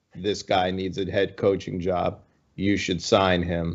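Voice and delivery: extremely monotone, low, flat drone without inflection. Quoting Bill Belichick's stamp of approval, Bill Belichick monotone impression. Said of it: "my best Bill Belichick impression ... in the most monotone voice ever".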